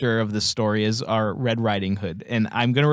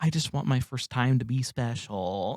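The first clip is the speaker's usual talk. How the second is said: mock shy tone, quieter; 6 dB quieter than usual. Retelling what a movie character says while friends tease her: imitating a shy voice. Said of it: "she's all, like, shy".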